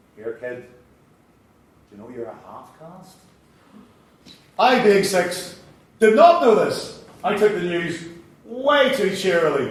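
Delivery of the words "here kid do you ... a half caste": very quiet, low, hushed, gloating cruel teasing. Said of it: "like a cat playing with an injured sparrow".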